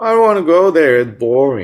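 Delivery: put-on whiny bored girl voice.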